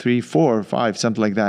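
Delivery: ordinary delivery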